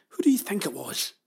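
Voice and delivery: ordinary delivery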